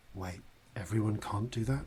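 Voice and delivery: whispering. Voicing a character who shuffles round awkwardly, whispering to Corzin: whispering. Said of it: "after a moment and whispers to you".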